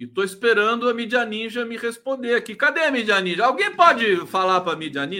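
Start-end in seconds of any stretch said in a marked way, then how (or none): 2.6-5.2 loud hollering shout, calling out. Waiting for Mídia Ninja to respond, calling out to them, shouting. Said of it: "Eu tô gritando".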